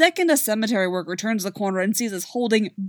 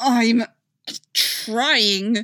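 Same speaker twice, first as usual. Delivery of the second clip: spoken through clenched, gritted teeth. Steve, trying to get the phone, answers through gritted teeth. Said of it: "Steve says through gritted teeth".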